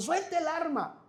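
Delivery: police-style yelling in chorus.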